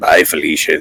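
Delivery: low, quiet mutter under the breath. Voicing a character as another one leaves: muttered under his breath. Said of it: "you hear Bannock under his breath".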